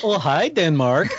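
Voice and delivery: rough, attempted Danish accent. Answering a quiz clue with a punchline: attempted Danish accent. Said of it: "I don't know if that's a Danish accent".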